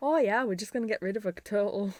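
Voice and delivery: broad Yorkshire accent, dropped T's.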